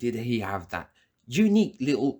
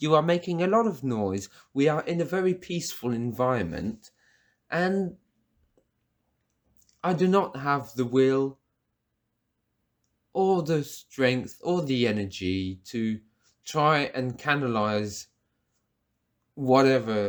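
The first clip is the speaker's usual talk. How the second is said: ordinary talk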